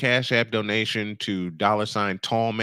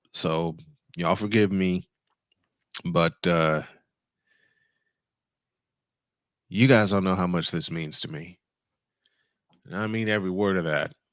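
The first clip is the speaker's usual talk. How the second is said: choking up, fighting back tears; 4 semitones lower than usual. Speaker thanks listeners for their well wishes, choking up. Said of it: "I'm gonna I'm I'm gonna cry".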